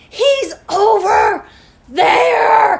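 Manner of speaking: shrill, very loud, high scream, "there" drawn out. Retelling how a man pointed out Bob in Walmart, retelling a scream. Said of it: "screaming like in the Walmart".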